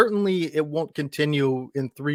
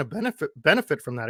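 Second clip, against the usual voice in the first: voice breaking, cracking upward mid-sentence. Giving an opinion in a conversation, voice cracking. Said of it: "Excuse me, voice crack".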